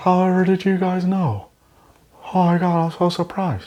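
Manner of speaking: stiff, very high-pitched voice. Acting her reaction at a surprise birthday party: Botox-stiff Scarlett Johansson impression. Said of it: "And she's like".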